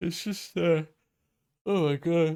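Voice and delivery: very high, loud words spoken through a yawn. Explaining a game matchup, the speaker breaks off yawning. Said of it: "I can't stop yawning".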